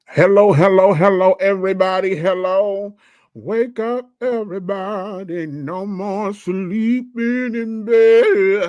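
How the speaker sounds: high-pitched, put-on drunken shout. Greeting everybody and telling them to wake up: putting on a drunk voice. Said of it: "Did I sound drunk enough?".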